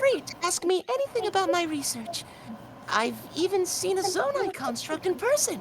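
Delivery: shy, soft, timid character voice. Trying a line requested from the crowd, in a shy and soft voice. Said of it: "she says shy and soft voice".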